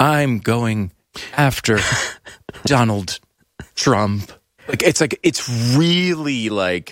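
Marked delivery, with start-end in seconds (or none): 0.0-4.3 slow, measured, deliberate delivery broken by pauses. Mocking how Letitia James speaks: imitating her slow deliberate tone. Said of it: "she speaks in this very deliberate tone".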